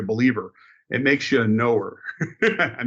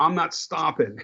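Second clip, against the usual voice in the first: put-on man's shout, higher; 4 semitones higher than usual. Retelling what a driver in the next car yelled: retelling a man's yell. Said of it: "he yelled at me".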